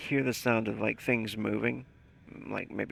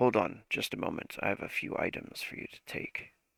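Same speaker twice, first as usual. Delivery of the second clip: lowered, deepened voice; 4 dB quieter than usual. Narrating a scene, the speaker voices another figure in a deeper voice. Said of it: "the deeper voice say".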